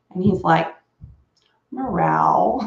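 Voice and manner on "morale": male voice saying meow, higher pitch. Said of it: "that cat said morale like a human".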